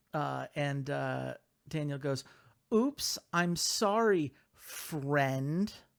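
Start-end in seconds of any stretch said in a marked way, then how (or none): 4.5-5.7 word friend said with heavy stress. Retelling a wrestler's apology after dropping slime: imitating stress on friend. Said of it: "He keeps emphasizing that word".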